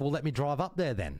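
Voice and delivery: ordinary talk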